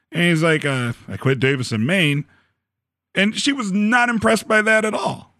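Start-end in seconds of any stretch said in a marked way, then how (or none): 0.6-2.2 mock-sheepish, put-on sheepish tone. Speaker retells a man telling a woman he quit, retelling a sheepish admission. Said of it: "he kind of sheepishly says it".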